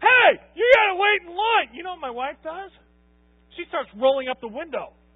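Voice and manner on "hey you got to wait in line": loud, pitched-up hollering. Retelling yelling out the window at a guy not waiting in line, a retold yell. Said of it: "I start yelling at the guy".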